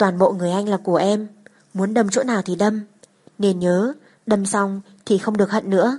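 ordinary delivery, nothing marked

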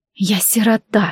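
muttered under the breath. Leaving as Mina wails after her from the house, she mutters under her breath. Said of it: "буркнула себе под нос".

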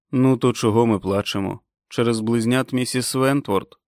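usual speaking voice

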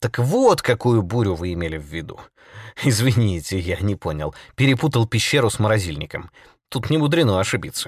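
plain reading voice

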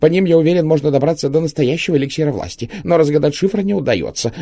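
very high panicked gabbling. Under electric shocks, Gromov blurts out what he knows, babbling even faster. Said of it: "затараторил еще быстрее".

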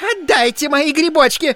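piercing, shrill, very high, loud shriek. A lady whose box was snatched from her by a man: shrieking. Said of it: "завизжала дама".

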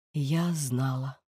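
subdued, hushed, muted voice. Nora answers Frulinne: subdued voice. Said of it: "Нора притихлим голосом".

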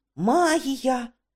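bubbling, tumbling excited babble. Narrator reading Rincewind's outburst after working magic, excitedly babbling. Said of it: "збуджено пробелькотів він".

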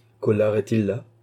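ordinary delivery

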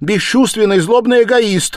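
very high, loud, ringing outcry. Narrator reads Dunya after a man leaves the room, crying out. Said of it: "вскрикнула Дуня".

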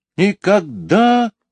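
very high-pitched flat outcry. Narrator reads the twins answering the starling in unison, exclaiming. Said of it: "воскликнули близнецы в один голос".

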